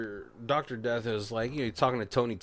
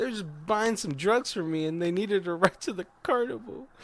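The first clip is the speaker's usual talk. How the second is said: desperate, begging, pleading voice. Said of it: "begging for his life".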